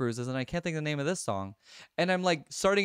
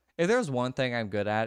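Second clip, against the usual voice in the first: ordinary talk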